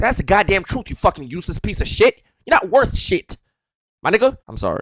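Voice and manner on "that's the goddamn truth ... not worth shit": furious, raging, lashing angry outburst. Lashing out at someone before apologizing for it, angry outburst. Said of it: "I'm not in a good mood".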